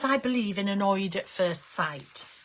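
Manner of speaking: plain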